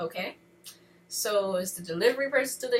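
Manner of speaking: plain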